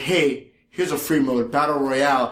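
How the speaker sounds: normal talking voice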